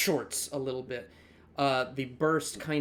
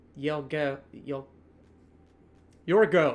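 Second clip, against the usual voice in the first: put-on French accent, struggling and attempted; 5 dB louder than usual. Narrating a scene and voicing a character, attempted french accent. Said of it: "I can't say your go in a French accent".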